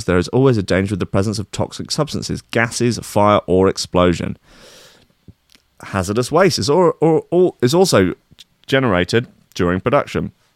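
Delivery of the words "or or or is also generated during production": ordinary talk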